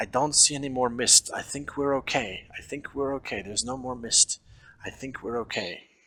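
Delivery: hushed whisper. Playing the elf who keeps scanning the sea and mountains, whispering. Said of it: "she's whispering".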